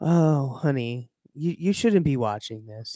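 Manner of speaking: soft, gentle, fatherly, reproachful tone. Acting out gently telling a teen off for memes: acting like a soft dad. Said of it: "soft dad and be like".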